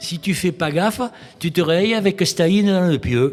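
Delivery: put-on accent of southwest France. Quoting what an ecologist friend used to say, in a southwestern french accent. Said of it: "avec son accent du sud-ouest".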